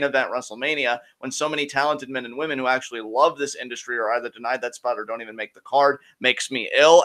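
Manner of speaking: usual speaking voice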